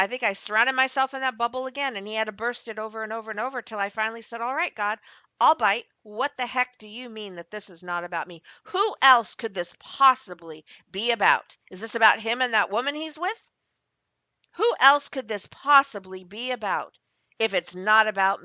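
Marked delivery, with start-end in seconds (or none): 4.4-18.5 loud, angry, self-centered, arrogant voice. Retelling what they finally said to God, the speaker replays their own arrogant tone. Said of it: "you can pick up the arrogance in my voice".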